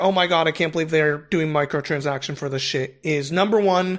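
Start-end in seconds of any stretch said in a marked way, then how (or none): none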